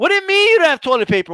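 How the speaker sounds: play-acted, shrill yell. Describing a store trip, the speaker acts out a customer yelling at somebody. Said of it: "you're just yelling at somebody for no reason".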